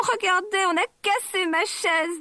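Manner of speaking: tiny, high, tearful, weeping little-one voice. Narrator reading a bear story, voicing Bébé Ours crying, tiny voice. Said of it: "dit Bébé Ours en pleurant avec sa toute petite voix".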